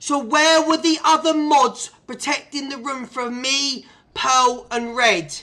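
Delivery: very slow, deliberate, word-by-word delivery. Asking a chat member again about the other mods, said very slowly. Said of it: "I'll say it very slowly".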